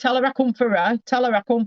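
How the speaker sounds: high, forceful acted-out shouting. Relaying a man's message for the listener's mum, imitating someone shouting. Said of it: "What are you shouting for?".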